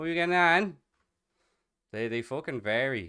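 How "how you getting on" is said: shrill, very high, loud Cork accent. A dublin-based speaker demonstrates irish regional accents, cork accent. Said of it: "And then there's the Cork accent".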